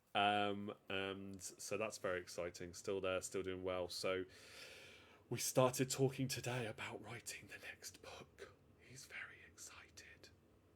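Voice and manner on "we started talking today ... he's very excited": breathy, hushed whisper. Talking about writing the next book with a son now in bed, whispering. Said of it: "Don't know why I'm whispering".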